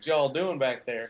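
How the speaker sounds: very strong put-on Southern accent. Imagining American pilots mocking European astronauts, in a very strong Southern accent. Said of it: "in very strong Southern accents".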